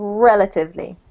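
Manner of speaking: emphasis on REL syllable. A teacher models a word's pronunciation for a student, stress on REL. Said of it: "So the emphasis is on rel".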